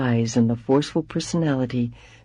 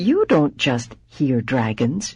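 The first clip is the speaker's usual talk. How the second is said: bewildered, wondering, puzzled tone with swooping pitch. Reading a story aloud, a mother speaking to her daughter: puzzled voice. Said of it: "she said in a puzzled voice".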